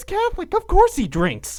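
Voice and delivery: acted, loud, very high, swooping, not-so-quiet aside. Quoting the matron of a family answering her child, in a not-so-quiet voice. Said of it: "says in a not so quiet voice".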